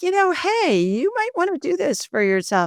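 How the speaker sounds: gentle, high, sing-song spirit voice.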